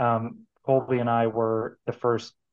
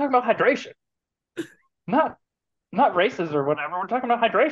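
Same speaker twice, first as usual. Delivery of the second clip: pushed way up high, hammered, basketball-star voice; 10 semitones higher than usual. Retelling how a coach mimicked a famous quote: Allen Iverson impression. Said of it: "he'd do his best Allen Iverson impression".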